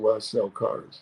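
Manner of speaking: put-on sarcastic tone. Retelling own answer to the father-in-law's question: retelling a sarcastic reply. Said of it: "Very s-, sarcastic".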